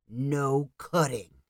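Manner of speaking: growling angrily. A man waiting in line glares at Danny, angry growl. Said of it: "gave Danny an angry glare and growled".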